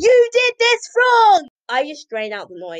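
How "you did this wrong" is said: very loud, shrill, drawn-out scolding shout. Imitating a teacher who shouts at students: imitating a teacher shouting. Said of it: "if you're shouting at me".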